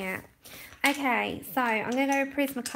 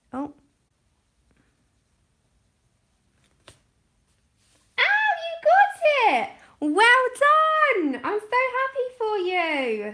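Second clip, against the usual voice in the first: high, swooping, stretched sing-song delight; 13 semitones higher, 8 dB louder than usual. Speaker congratulating a listener who just got the job, excited. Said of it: "You can hear the excitement in my voice".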